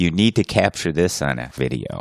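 ordinary delivery

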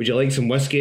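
ordinary delivery

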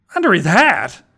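short, irritated, huffy. Reading fiction, a girl responds to another character's boast, huffing. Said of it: "Emerald huffed".

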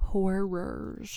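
heavy stress placed on the word "horrors". Introducing the last segment of the day, stress on horrors. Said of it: "got to emphasize that second syllable".

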